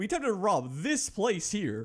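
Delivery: very loud, high yell with cracking voice. In a scene, a man confessing an attempted robbery of this place, very loud. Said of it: "I have to repeat myself sometimes because I get very loud".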